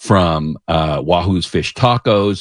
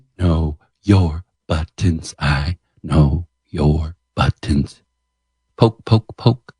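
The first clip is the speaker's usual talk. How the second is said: suggestive, seductive, sultry, sensual tone. Teasing someone who praised Joker 2, the speaker says it sensually. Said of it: "Why you gotta say it so sensually?".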